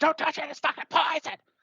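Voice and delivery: very high-pitched panicked squeal, urgent, put-on. Retelling a film scene where a character stops a toast: imitating a scream. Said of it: "he slaps the glasses down and screams".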